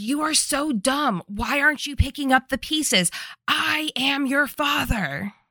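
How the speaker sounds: mock berating villain rant, high-pitched. Retelling a villain's monologue at Lauren: imitating Carson Morgan screaming. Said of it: "he is screaming at Lauren".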